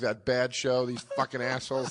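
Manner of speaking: muttering under breath. Retelling walking off stage after bombing: imitating muttering under breath. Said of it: "I'm muttering under my breath".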